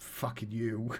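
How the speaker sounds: muttered under breath. During a lecture in a played scene, a character retorts, muttered under breath. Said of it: "Just hear under his breath".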